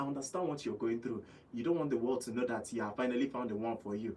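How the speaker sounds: discreet, soft, hushed half-whisper. Radio host addressing listeners who keep their love private, half-whispering. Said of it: "I'm whispering now".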